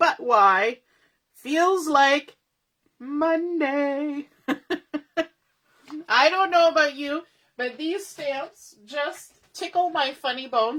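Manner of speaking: choked-up laughing delivery, words squeezed through laughter. Presenter showing stamps to viewers, choked up with laughter. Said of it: "Sorry, I've got choked up".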